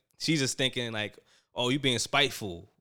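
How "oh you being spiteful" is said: ordinary delivery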